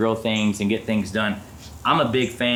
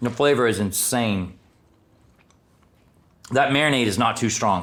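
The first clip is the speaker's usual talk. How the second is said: speaking mid-chew with mouth full. Tasting the meat just cooked, talking with mouth full. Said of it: "I'm not even gonna finish chewing it".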